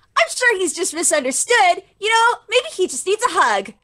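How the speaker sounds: sunny, upbeat, unexpectedly happy and cheery. Playing a captain answering grim news, inexplicably happy. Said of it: "this woman is inexplicably happy about it".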